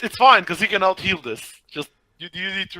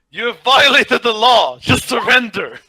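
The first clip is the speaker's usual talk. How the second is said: all-out, high, loud screaming; 5 semitones higher, 7 dB louder than usual. On their turn in the game, a player keeps screaming at this guy.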